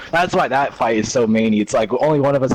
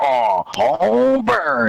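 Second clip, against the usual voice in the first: very high, rough, pained grunts; 9 semitones higher than usual. Speaker describing Vader getting hit by Luke in the fight, Vader grunting impression. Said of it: "the little grunts Vader makes".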